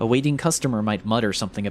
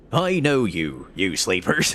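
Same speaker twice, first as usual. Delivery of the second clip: hammy, slow, bad put-on old sea-dog pirate voice. Voicing a game character who is cooking, deliver his line in pirate voice. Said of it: "Let's do pirate voice".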